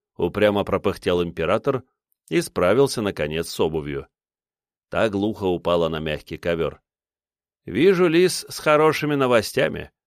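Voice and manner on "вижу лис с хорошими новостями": dry, knowing, wry smirking tone, pitched up. The emperor, having finally got his shoe off, greets someone: smirking. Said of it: "Усмехнулся он".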